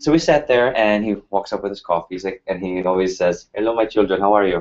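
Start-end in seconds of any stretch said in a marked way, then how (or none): 3.5-4.6 put-on Indian-accented voice. Retelling the professor greeting students at the review: Doctor Bragat's Indian accent. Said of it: "he had this Indian accent".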